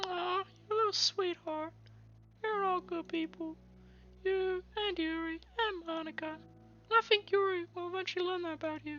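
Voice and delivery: squeaky character voice. Narrator reading a character's reply to a friend in a story: squeaky voice. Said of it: "doing these squeaky voices".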